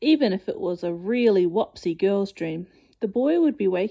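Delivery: plain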